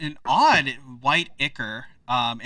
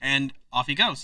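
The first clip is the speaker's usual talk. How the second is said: plain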